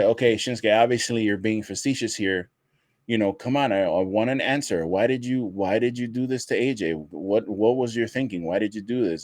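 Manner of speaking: ordinary delivery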